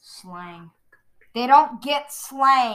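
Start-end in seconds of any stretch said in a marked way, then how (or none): 1.3-2.7 loud, angry, mad-sounding voice. Answering what adults don't get about kids, the kid replies, angry. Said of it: "now you just sound angry".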